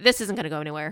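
ordinary talk, nothing marked

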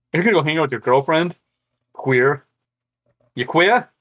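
put-on Philadelphia accent. Mocking a guy who'd rather hang out with his girlfriend, in a philly accent. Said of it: "I gotta get that Philly accent there for you".

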